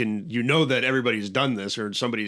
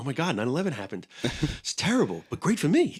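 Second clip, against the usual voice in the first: silly, bad, swooping voice; 4 semitones higher than usual. Mocking someone making movies about national tragedies, Mark Wahlberg impression. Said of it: "a fucking stupid Mark Wahlberg impression".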